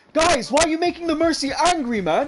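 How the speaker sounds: loud, high-pitched screaming. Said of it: "I start screaming from the back".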